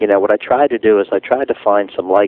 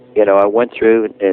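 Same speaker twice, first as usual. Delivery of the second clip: ordinary talk, nothing marked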